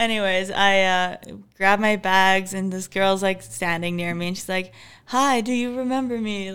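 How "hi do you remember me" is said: broken English delivery. Retelling a girl greeting the speaker after grabbing bags, imitating broken English. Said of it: "Like speaking in broken English again".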